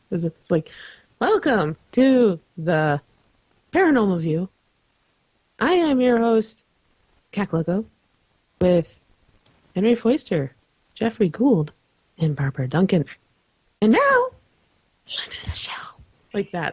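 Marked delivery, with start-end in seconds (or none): 1.2-15.7 put-on stilted, stiff, wooden reading. Retelling how cue cards were once read on the show: imitating own wooden delivery. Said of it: "absolutely wooden".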